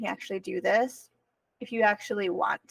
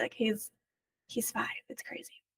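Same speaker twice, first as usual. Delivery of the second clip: teary, quieter and slower; 8 dB quieter than usual. A mother talking about her first son, teary. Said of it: "I'm getting teary already".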